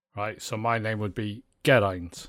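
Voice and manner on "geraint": Geraint with stress on first syllable "Ger". Explaining Welsh word stress with his own name: stress first syllable of Geraint. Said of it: "most Welsh words, the inflection is the start of the word".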